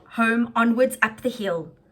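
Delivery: ordinary delivery, nothing marked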